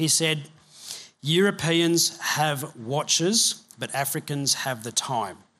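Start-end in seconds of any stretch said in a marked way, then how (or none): 1.2-5.3 bone-dry, flat deadpan delivery. Retelling a pastor's reply to a woman who kept asking the time, imitating deadpan delivery.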